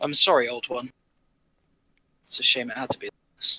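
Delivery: whispered speech. Kneeling by a fallen creature, speaking to it in character: whispering. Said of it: "I'm just sort of whispering it".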